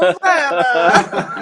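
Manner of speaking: high, laughing, mock German Armenian accent.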